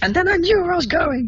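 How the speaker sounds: very high, loud, mock-indignant squeal.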